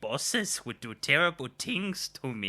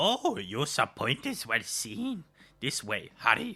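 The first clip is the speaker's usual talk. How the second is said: put-on little alien creature voice. Voicing Jar Jar in a movie read-along, sounding like Yoda. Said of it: "Sometimes my voice sounds like Yoda".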